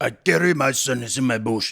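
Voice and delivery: rough, inaccurate attempt at a Japanese accent. Trying out an accent while the other speaker judges it, in an attempted Japanese accent. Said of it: "Does that sound Japanese to you?".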